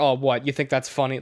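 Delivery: plain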